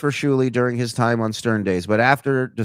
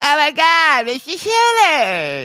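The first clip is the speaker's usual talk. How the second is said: put-on woman's voice, higher; 4 dB louder than usual. Quoting how she greets him after praise for the impression: Tan Mom impression. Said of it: "People love the Tan Mom impression".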